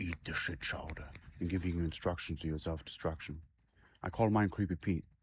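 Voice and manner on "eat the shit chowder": soft, hushed whisper, close to the ear. Describing the voice in your head giving instructions: imitating a whisper. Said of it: "he's whispering in your ear".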